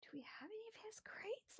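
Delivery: nervous, soft, unvoiced whisper.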